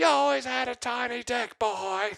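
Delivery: put-on screaming, very high and shrill. Describing calling a man's mother on speakerphone, imitating her screaming at him. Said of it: "She just screams at me".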